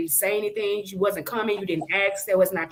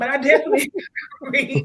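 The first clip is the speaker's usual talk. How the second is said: laughing through the words, giggly and pitched-up; 6 semitones higher, 6 dB louder than usual. Agreeing with another speaker's opinion while giggly: giggling while talking. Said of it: "sorry, I'm giggly".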